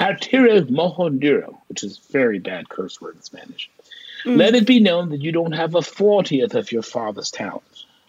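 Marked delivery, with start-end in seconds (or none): 4.4-7.8 put-on British accent. Speaker retelling a message someone left on his machine, fake British accent. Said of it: "Somebody in a fake British accent left this message".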